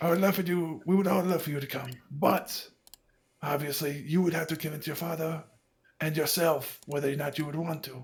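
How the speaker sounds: put-on French accent. Speaking in character, warning about a dangerous job: French accent. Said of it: "I'm trying to do this French accent".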